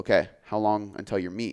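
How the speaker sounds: plain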